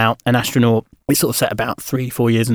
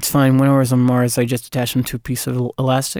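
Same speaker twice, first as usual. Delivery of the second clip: put-on American accent, mostly at normal pitch. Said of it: "Can you say that in an American accent".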